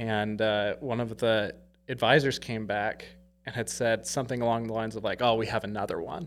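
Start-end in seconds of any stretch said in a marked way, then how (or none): 5.2-6.3 put-on exasperated delivery. Retelling what an advisor said at the dealership: imitating an exasperated advisor. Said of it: "this exasperated look on their face".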